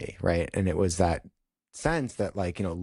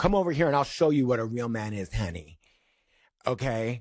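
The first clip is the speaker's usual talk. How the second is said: taunting, daring, cocky tone flung right back; 4 semitones higher than usual. Retelling own comeback to a guy after class: retelling own very loud comeback. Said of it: "I said it just like that, very loud".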